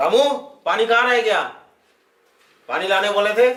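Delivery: hot-tempered, angry, demanding call. A character calls to Ramu about the water he asked for, shouting angrily. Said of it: "इतना क्यों चिल्ला रहे हो आप?".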